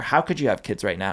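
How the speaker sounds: ordinary delivery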